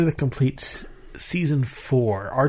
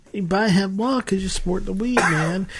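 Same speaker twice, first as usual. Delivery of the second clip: put-on stoner voice, slight regional tone; 4 semitones higher than usual. Performer answering a partner's request for a better stoner accent; stoner accent. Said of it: "you give me a better stoner accent".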